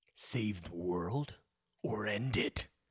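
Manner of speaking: low, very slow intense voice. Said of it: "which is why I had to use my intense voice".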